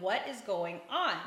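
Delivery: put-on panicked voice. Retelling the moment the car veered over to stop: imitating own panic. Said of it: "I'm panicking inside going".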